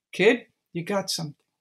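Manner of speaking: ordinary talk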